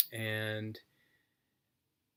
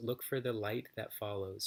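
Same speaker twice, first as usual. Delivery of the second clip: ordinary talk, nothing marked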